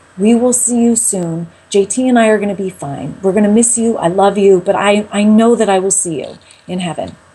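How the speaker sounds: put-on voice through heavy crying, tearful bawling. Retelling a prayer said alone in a bathroom stall: imitating a tearful prayer. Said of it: "I'm bawling my eyes out".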